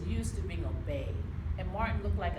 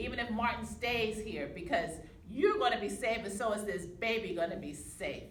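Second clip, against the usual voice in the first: ordinary delivery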